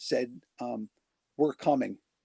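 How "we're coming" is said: robot-like mechanical voice. Retelling a strange voice heard while home alone: robotic voice. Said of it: "this robotic voice go".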